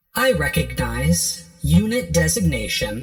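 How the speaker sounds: loud computer console voice. Voicing a program speaking from a console to a player: Utopia console voice. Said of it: "And a voice comes out of the console".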